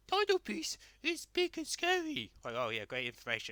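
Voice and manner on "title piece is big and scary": taunting, very high, slow and drawn out. Retelling how Ryan mocked Vicky in a scene: mocking Vicky impression. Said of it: "Ryan is just mocking Vicky".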